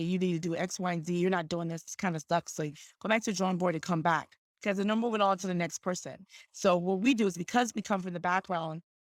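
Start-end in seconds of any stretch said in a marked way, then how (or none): none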